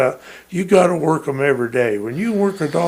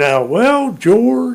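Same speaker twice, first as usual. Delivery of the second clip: put-on slow drawling voice, higher and louder; 7 semitones higher, 5 dB louder than usual. Retelling what a friend said about selling his dog: imitating Dale's slow voice. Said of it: "in his slow voice".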